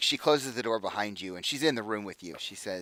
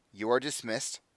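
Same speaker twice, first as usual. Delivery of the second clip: very crisp, curt, clipped speech; 2 semitones higher than usual. Game narrator voicing a woman dismissing the constable, in a very clipped voice. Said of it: "she just says in a very clipped voice".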